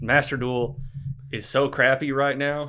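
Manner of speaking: loud sarcasm laid on thick. Complaining about a game getting too many updates: heavy sarcasm. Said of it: "I'm laying the sarcasm on pretty thick".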